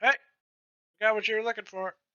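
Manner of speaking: high-pitched yell, calling out. Calling up a tunnel to a goblin: yelling up a tunnel. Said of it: "Gonna yell up".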